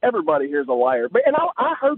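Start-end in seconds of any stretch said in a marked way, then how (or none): none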